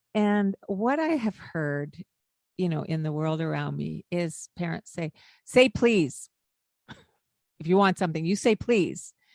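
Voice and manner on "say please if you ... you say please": mock-impolite, rude, demanding tone. Speaker imitating parents who tell a child to say please: mimicking an impolite demand. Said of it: "they're asking in a not polite tone of voice".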